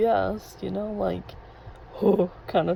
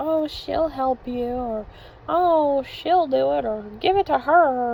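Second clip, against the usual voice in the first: put-on high, little old-lady granny voice; 6 semitones higher, 4 dB louder than usual. Imitating an older coworker outing her in front of guests, little granny voice. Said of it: "like in her little granny voice".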